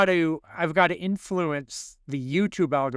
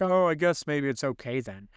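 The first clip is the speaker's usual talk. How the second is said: mock dopey, dim-sounding voice. Retelling a friend's reply in a dopey voice: imitating a friend, Keith, dopey. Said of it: "I'm sorry that I just made you sound like that".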